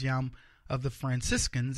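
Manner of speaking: plain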